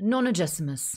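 plain

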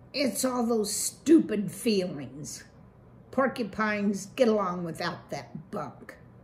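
ordinary delivery

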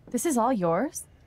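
astonished, can't-believe-it tone. Seeing someone's house for the first time, a visitor asks the owner, surprised. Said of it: "Don't sound so surprised".

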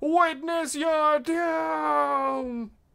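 very high silly yell, doom stretched out. Describing a game clip, the speaker quotes a psyker in a funny yelling psyker voice. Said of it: "in a very funny voice".

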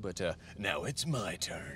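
slow, dramatic movie-trailer announcer voice. Taking the GTR stolen from Karston for a turn racing, dramatic movie-announcer voice. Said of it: "That's my movie announcer voice".

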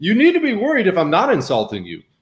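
ordinary talk, nothing marked

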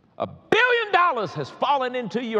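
excited preacher-style yell, very loud, high, swooping. Addressing a crowd, some of whom jumped at the volume: yelling. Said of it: "excuse me for yelling".

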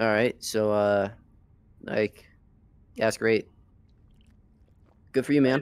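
bored, flat, unenthusiastic, half-hearted delivery. Responding to another's superpower in character: unenthusiastic. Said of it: "Why why sound so unenthusiastic?".

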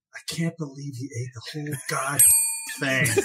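quiet mutter under the breath, murmured aside. Retelling what a waitress said walking by, imitating muttering under breath. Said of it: "under her breath".

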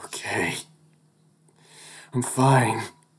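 muddled, half-formed mumbling, lost and unsure. Cameron, trying to get up unsteadily, answers; confused mumble. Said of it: "Cameron sounds confused as he mumbles".

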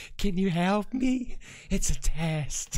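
eerie recorded-sounding voice. The speaker repeats voices captured in a church recording, in a freaky deaky voice. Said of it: "I like his freaky deaky voice there".

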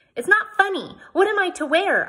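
very high upset cry. First-person narrator, whose dresses a beast ate, answers a laughing man, crying out upset. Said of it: "I cried".

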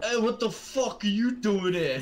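put-on loud, high Bronx accent. Retelling a horror scene where the monster speaks up: bronx accent. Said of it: "they just spoke in, like, Bronx accents".

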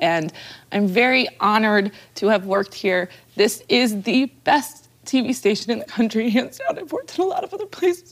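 choked-up, tearful voice, weeping through words. Thanking colleagues at the TV station as they say goodbye, crying while speaking. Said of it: "I'm crying".

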